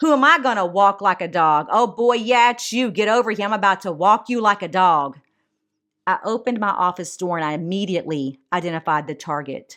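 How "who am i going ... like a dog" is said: loud, harsh, barking yell. Retelling a taunt heard down a hallway: imitating a loud harsh voice. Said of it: "very loud and a harsh tone".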